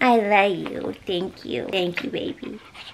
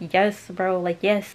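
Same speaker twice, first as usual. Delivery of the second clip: normal talking voice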